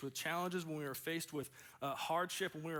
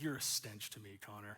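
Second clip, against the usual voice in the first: annoyed, fed-up, irritated tone; 7 semitones lower, 4 dB quieter than usual. Retelling his mom's words when he asked for project help: imitating irritated mom. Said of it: "she's irritated with me".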